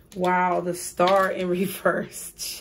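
slow, laughing, amused surprise. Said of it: "I'm gonna tell you why I'm laughing".

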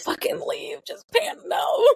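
mock panicked outburst, high, cracking yelp.

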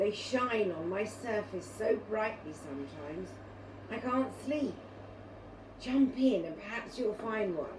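usual speaking voice

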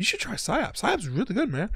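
mimicked hushed tones. Imitating players who recommend a game: imitating someone in hushed tones. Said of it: "in hushed tones".

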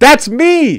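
shrill, very high-pitched, loud yelling shout. Streamer thanking players and chat, yelling. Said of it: "Sorry for yelling".

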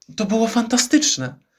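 high, called-out exclamation. A woman calls out to a man she has just helped to his feet. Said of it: "zawołała".

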